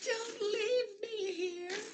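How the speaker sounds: mock very high, drawn-out, pitiful whining plea. Retelling a character's plea as the others leave: imitating a pathetic plea. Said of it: "Being all pathetic and such".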